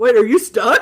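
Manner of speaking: booming, very loud call. Recalling hearing a friend from home call out, in Kevin's booming voice. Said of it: "I hear his like booming voice".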